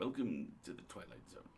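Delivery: television narrator intro voice. Joking about being just the narrator: Rod Serling voice. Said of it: "I'm just Rod Serling all up in this piece".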